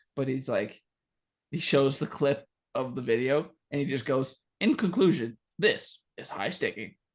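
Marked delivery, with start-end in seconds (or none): 4.6-6.9 mechanical, robotic computer announcer voice. Retelling the ending of a league suspension video: imitating a robot voice. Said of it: "some robot voice".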